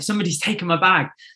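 alarmed, panic-stricken exclamation. Retelling losing a bag after a race swim, retelling own panic. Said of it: "I had that panic moment where I was like".

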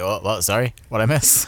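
mock groggy, disoriented, fresh-from-a-nap voice. Imitating Nintendo waking up from a nap: groggy just-woken voice. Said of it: "waking up from a nap like".

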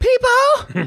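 very high, flamboyant, showy delivery. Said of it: "Paul was always so just flamboyant".

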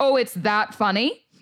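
furious voice. Retelling what was said to a partner laughing at a joke, retelling own furious remark. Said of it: "it made me furious".

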